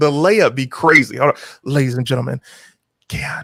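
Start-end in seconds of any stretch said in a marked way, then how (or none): 1.6-3.4 whispering, lower. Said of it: "'cause I whisper".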